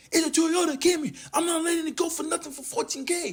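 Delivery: acted shouting. Retelling a car seller's words: imitating a seller shouting. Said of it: "He's shouting at me".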